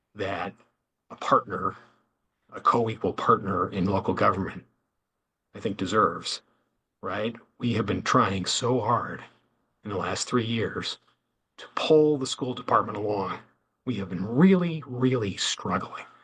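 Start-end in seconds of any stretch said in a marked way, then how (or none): 7.6-16.0 fed-up, exasperated, audibly frustrated tone. Speaking as a partner in local government about the school department, frustrated. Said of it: "I hope you can hear the frustration in my voice".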